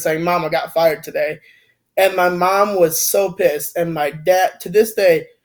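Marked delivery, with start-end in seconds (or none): 0.2-1.4 acted-out tearful voice, holding back crying. Retelling calling mom after being fired, imitating holding back tears. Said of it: "like holding back tears".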